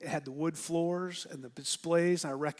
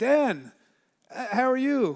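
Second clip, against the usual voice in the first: put-on loud, high-pitched, booming Brazilian accent; 7 semitones higher, 8 dB louder than usual. Retelling a WhatsApp call six months later from Felipe, imitating Felipe's Brazilian accent. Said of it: "It's like in this Brazilian accent".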